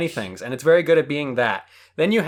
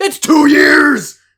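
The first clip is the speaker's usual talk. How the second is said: insistent shouting, very high, very loud, shrill; 11 semitones higher, 10 dB louder than usual. Arguing with another speaker over how long ago a season came out: yelling. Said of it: "just stop yelling at me".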